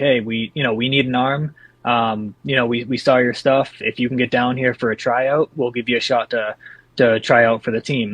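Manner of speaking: usual speaking voice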